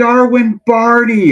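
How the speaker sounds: play-acted shrill, very high, full-volume yell. Speaker retells his son calling out to a player across the field, retelling a yell as loud as possible. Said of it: "as loud as he could".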